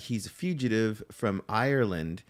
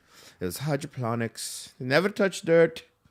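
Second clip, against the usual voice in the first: bad put-on Irish accent, pitched up; 5 semitones higher, 3 dB louder than usual. Quoting the man who sold him weed, in a terrible Irish accent. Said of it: "I got a terrible Irish accent".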